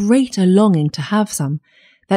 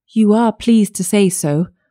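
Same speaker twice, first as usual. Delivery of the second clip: usual speaking voice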